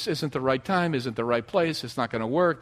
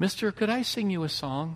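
put-on very sweet voice, much quieter; 2 semitones higher, 4 dB quieter than usual. Retelling what she asked him from below, imitating the sweetest voice. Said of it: "in the sweetest voice I think I've ever heard".

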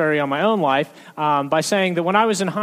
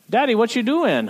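put-on small child's high, chatty toddler voice; 6 semitones higher than usual. Retelling a two-year-old's running commentary at home: imitating Reuben. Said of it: "it is just running commentary".

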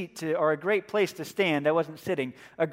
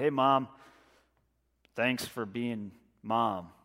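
put-on low, slow, surly, grudging teenage grunt; 8 semitones lower, 6 dB quieter than usual. Imitating a surly teenager wandering through the kitchen on Mother's Day, retelling a grunted greeting. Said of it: "a sort of grunted".

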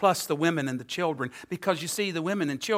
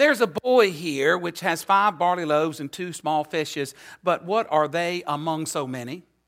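ordinary talk

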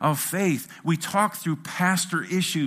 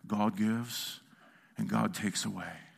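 deep, low, hushed, creaky, pious preacher-like voice; 7 semitones lower, 9 dB quieter than usual. Speaker retelling what a man with his hand on a sick child said, imitating a religious voice. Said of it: "he says in the most religious voice".

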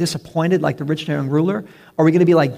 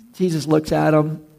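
plain

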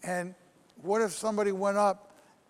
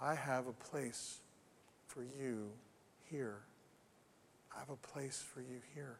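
very quiet, hushed, still, small low murmur; 7 semitones lower, 17 dB quieter than usual. Retelling what God said to the speaker's heart about a ministry move, very quiet. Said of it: "he said very quietly to my heart".

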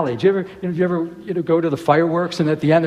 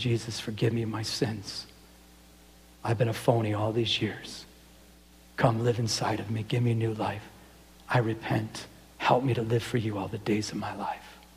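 mock weeping, tearful pleading, lower and quieter; 7 semitones lower, 10 dB quieter than usual. Retelling a man's prayer of repentance, imitating a weeping prayer. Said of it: "weeping and crying and saying".

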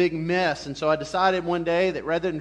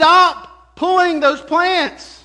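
shrill, very loud, slow, high drawn-out screaming; 11 semitones higher, 10 dB louder than usual. Retelling how a neighbor screamed at them in the garden: imitating a neighbor screaming. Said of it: "screaming at me".

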